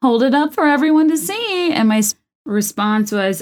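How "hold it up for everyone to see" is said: mock high-pitched, demanding screaming. Retelling a bridal shower gift moment: imitating someone screaming. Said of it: "she was screaming".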